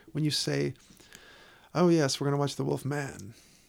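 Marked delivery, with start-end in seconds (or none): 2.5-3.3 extra stress on the word man. Showing how English people say The Wolf Man, extra emphasis on man. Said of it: "there's a little more emphasis on the word man".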